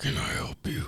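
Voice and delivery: strange, breathy put-on whisper. Retelling some dude at Taco Bell greeting them, in a weird put-on voice. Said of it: "Some dude was just talking all weird".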